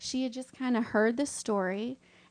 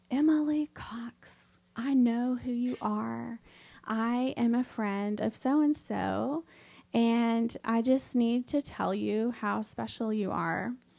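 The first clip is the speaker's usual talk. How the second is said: put-on sugary, tender little voice, slow. Speaker retells what a woman said to her after asking her name: imitating a sweet little voice. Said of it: "in this sweet little voice".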